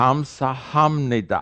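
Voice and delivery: slow, drawn-out pronunciation. In a joke, a Korean speaker repeats the word when asked to say it slowly, said slowly. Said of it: "Say it slowly".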